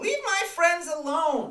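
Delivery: shrill, very high, very loud yell. Game master voices a character who comes out to defend the party, yelling. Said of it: "she would have come out yelling that".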